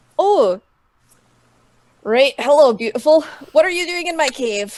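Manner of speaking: perked-up, bright, sunny, cheerful voice. Billy turns, recognizes the visitor in his cave, brightening up. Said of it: "he like brightens up".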